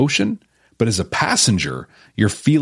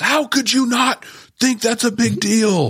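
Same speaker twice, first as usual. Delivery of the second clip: very high, exasperated, outraged scream; 13 semitones higher than usual. Imagining viewers reacting to the hosts' missed detail: imitating viewers screaming. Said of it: "imagine you screaming at us".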